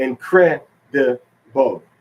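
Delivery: "incredible" drawn out slowly, "cre" stressed. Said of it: "In English".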